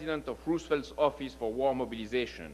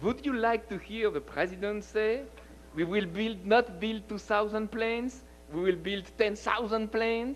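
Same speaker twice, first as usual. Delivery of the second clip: put-on comic French accent, laid on thick, pitched up; 8 semitones higher than usual. Retelling a story about a president's quote, in exaggerated French accent. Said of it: "to imitate a French accent within a French accent".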